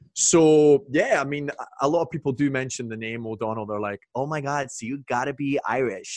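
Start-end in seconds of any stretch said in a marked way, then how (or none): 4.2-6.2 put-on American accent. Quoting people reacting to the name [name]: American accent. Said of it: "That's my American".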